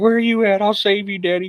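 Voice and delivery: squeaky animal-like voice. Voicing the pet who wants to rescue its owner: voicing Boar the pet. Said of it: "He's like".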